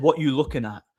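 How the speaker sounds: shouting in a man's voice. Retelling how a passing junkie shouted over at the door: imitating a man shouting. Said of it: "he shouted at me".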